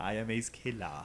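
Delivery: douchey show-off bro voice. Playing Ace Killer for the others: playing a douchey guy. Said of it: "You sound like a douche".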